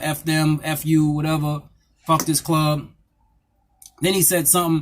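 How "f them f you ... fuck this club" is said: usual speaking voice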